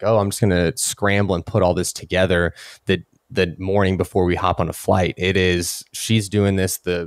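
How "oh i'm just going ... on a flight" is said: ordinary delivery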